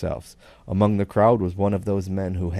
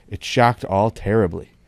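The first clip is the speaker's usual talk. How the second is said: ordinary delivery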